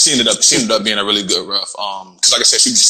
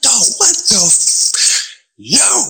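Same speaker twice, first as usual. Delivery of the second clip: mock, very slow, high, drawn-out cry of pain; 13 semitones higher than usual. Retelling reacting as a man grabbed and twisted the sore spot, retelling a scream. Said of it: "I'm screaming".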